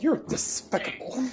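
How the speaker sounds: put-on cartoon duck voice. Saying what the cartoon duck would say: Daffy Duck voice. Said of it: "you know what Daffy Duck would say?".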